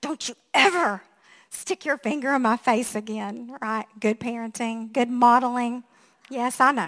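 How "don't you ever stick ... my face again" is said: acted speaking through clenched teeth. Retelling a warning to the one who stuck a finger in the speaker's face, through gritted teeth. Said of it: "through gritted teeth, I said".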